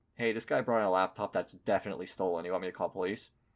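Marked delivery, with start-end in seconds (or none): none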